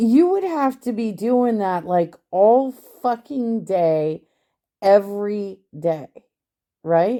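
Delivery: loud ranting yell. Ranting about a case with Pumpkin watching, the speaker is yelling. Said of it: "why are you yelling?".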